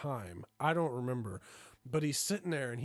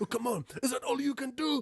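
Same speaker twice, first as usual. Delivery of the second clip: put-on shrill, very high-pitched yelling; 12 semitones higher, 4 dB louder than usual. Retelling a man yelling at someone doing reps: imitating someone yelling. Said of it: "He's literally yelling at this guy".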